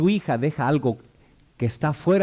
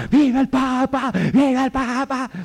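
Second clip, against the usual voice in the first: put-on high-pitched cheering shout, young man's voice; 9 semitones higher than usual. Recalling a young man standing on his chair at a papal audience: retelling a young man's shout. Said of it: "y gritaba".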